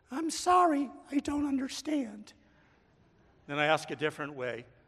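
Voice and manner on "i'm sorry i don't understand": very high, syrupy sweet digital assistant voice. Describing a call to the pharmacy's automated line, imitating a sweet syrupy voice. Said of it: "answers me in a sweet, syrupy voice".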